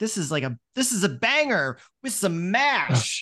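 mock super excited. Retelling what a presenter on the show said, imitating her super excited. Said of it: "And she's super excited".

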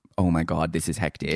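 ordinary talk

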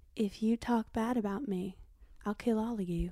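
put-on flat monotone at one steady volume. Showing off a favorite impression of Madison: Madison impression, monotone. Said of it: "my Madison impression that I love where she's just like".

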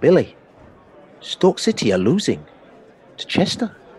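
poor put-on Scottish accent. Speaker retells what a guy on the terraces told him; really bad put-on accent. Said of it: "Really bad accent, I know".

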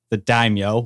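normal talking voice

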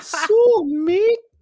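squeaky put-on voice. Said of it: "Put that helium down".

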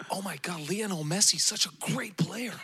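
put-on high-pitched American accent. Imagining fans going all out at the World Cup final, American accent. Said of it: "is that your American accent?".

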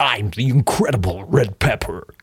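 big, husky American movie-trailer voiceover delivery. Imitating a voiceover artist who comes in announcing himself: Red Pepper voice. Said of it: "another husky American".

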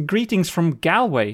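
ordinary talk, nothing marked

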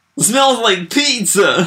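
sudden, out-of-nowhere yell, very high and loud. Describing a woman staring blank-faced into the camera, the speaker imitates her sudden yell. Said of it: "she would just yell a line like this".

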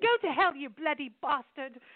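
put-on British accent. Joking about telling someone to go to hell: British accent. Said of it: "with a British accent".

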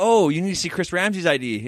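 usual speaking voice

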